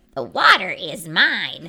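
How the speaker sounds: froggy croaking voice with swooping pitch. Reading a story aloud, voicing Milton's line: Milton's froggy voice. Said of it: "Now I'm using my froggy voice".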